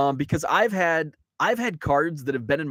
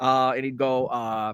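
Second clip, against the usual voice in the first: ordinary talk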